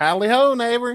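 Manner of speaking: very high-pitched cartoon neighbor voice. Retelling a cartoon scene where the neighbor walks in: Ned Flanders voice. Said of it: "Ned Flanders walks in and goes".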